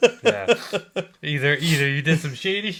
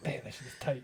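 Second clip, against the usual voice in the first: very soft, hushed half-whisper into the mic; 5 semitones lower, 16 dB quieter than usual. Complaining that something is too tight to get a finger in: half-whispering into the microphone. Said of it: "quite the thing to whisper into the microphone".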